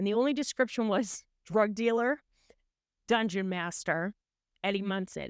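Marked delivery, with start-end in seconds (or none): none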